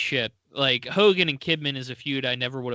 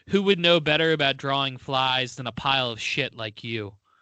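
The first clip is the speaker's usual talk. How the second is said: ordinary delivery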